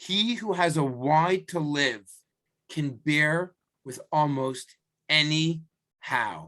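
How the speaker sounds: slow, weighty delivery with long, landing pauses.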